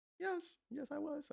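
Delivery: put-on very high, very slow, creaky old-man croak. Answering his grown kid years from now about his trading, in an old man voice. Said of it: "It's my old man voice".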